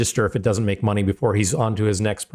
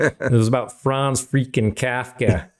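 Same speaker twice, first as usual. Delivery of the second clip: put-on Chicago accent. Commentator on money-losing films repeating his last sentence in a Chicago accent. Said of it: "I want to do that in a Chicago accent".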